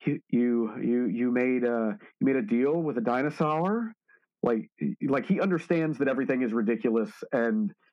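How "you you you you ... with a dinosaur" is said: usual speaking voice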